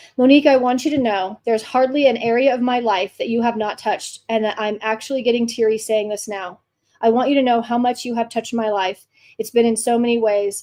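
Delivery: ordinary delivery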